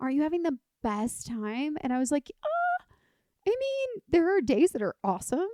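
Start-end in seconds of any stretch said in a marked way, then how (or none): 0.0-1.8 put-on valley girl voice. Quoting a woman talking about them doing the PCT, valley girl voice. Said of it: "You do that voice really well. ... She sounded like a valley girl".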